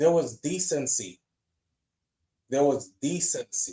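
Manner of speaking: voice catching, choked up, overcome, barely able to speak. Retelling a man pointing at the screen: imitating a choked-up man. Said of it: "He was so choked up".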